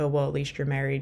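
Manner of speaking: ordinary talk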